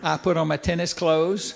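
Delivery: plain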